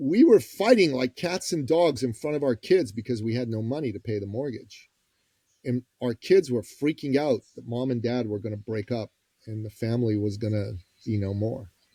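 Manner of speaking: plain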